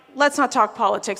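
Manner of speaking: ordinary talk, nothing marked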